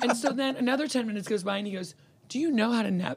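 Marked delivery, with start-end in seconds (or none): 2.3-3.2 play-acted kindest, very gentle, nonjudgmental voice. Retelling a driver asking his passenger a question, imitating a very kind voice. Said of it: "In the kindest voice I've ever heard".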